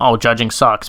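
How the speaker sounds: plain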